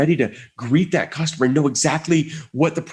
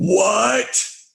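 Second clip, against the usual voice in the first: what stretched out, high and desperate; 7 semitones higher than usual. Retelling how the woman answered the speaker's coffee complaint, retelling a desperate 'what?'. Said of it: "look of desperation on her face".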